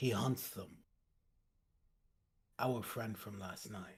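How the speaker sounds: low, hushed, barely audible mutter under the breath. Voicing a character telling the others at a river: speaking under his breath. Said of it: "under my breath, just so that they can hear me".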